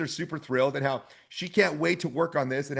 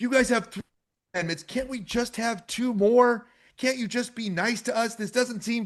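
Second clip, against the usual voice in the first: plaintive, high-pitched, begging voice; 7 semitones higher than usual. Retelling what was said in a debate, imitating someone pleading.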